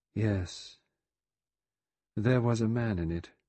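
dull, flat tone. Vera answers Lombard's question, in a dull voice. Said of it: "she said in a dull voice".

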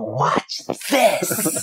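put-on bright, high, boyish, gleeful shouted exclamation.

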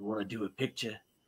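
very quiet, barely audible character voice. Retelling wearing the helmet and offering a kid a picture: Boba Fett voice. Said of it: "I tried doing the voice too".

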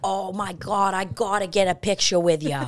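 put-on Boston accent. Describing a waitress who recognized Chelcie last night, imitating a waitress's Boston accent. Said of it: "Her accent".

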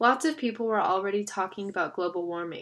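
plain

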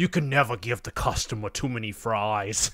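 put-on passionate, heartfelt New York or New Jersey accent. Retelling what a friend said about fries; New York or New Jersey accent. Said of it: "he had like a New York or a New Jersey accent".

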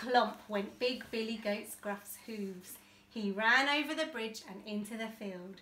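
ordinary delivery

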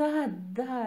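said with a laugh. Millie answers the dragon on her return, laughing. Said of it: "râse Millie".

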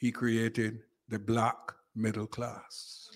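slow, unhurried delivery. Answering where the spirit of Barrow is most alive today, speaking slowly. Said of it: "let me speak slowly".

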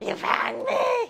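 squeaky creature voice, very high, loud and shrill. Voicing a Korok during a game, in a Korok voice. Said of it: "Now that's the kind of Korok voice that I'm looking".

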